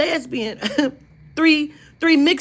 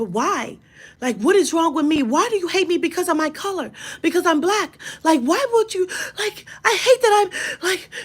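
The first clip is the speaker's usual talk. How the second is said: put-on crying and ranting voice; 3 semitones higher than usual. Retelling a video of a girl going off about Jim Crow laws: imitating someone crying and ranting. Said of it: "She's crying".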